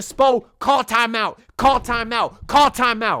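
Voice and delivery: loud, drawn-out yelling. Recounting a Heat game, the speaker reenacts yelling at coach Spo. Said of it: "I'm yelling".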